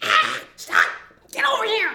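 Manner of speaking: very high, shrill, swooping, screaming witch voice. Retelling how another guy screamed at everybody, in [name]'s fat-witch screaming voice. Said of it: "He sounded like a fat witch".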